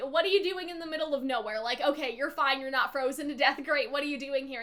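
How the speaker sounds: ordinary talk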